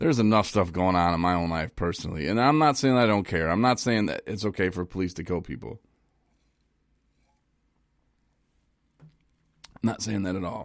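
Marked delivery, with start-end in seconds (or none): 2.3-10.6 choked-up voice breaking, emotion catching in the throat. Speaking about their own life and feelings, getting choked up. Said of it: "I'm getting choked up here".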